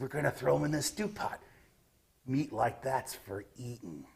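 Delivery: sharp little growling snarls, goblin style. Narrating a game scene, voicing one goblin answering another in a snarling goblin voice. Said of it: "they will make little sharp growls and snarls".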